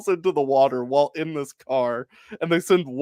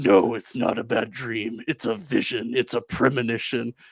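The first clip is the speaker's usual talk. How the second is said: mock unnatural, badly dubbed delivery, lower; 5 semitones lower, 3 dB quieter than usual. Retelling a reply to someone dismissing the dream, in unnatural, poorly dubbed delivery. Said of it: "imagine I'm saying this super unnaturally and poorly dubbed".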